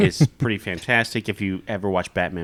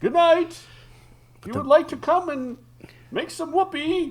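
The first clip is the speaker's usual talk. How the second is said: put-on comic-book villain voice, higher. Retelling an old bedtime joke line: Bane voice. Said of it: "And so I'd make the Bane voice".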